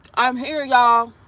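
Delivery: a little twang in the voice. Retelling a classmate arriving late to class: imitating a friend's twang. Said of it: "a little accent, like, a little twang in her voice".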